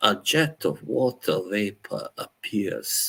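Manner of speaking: fake, slow, unhurried British accent. Reading a descriptive passage aloud, in a put-on British accent. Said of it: "I'm gonna put on a British accent".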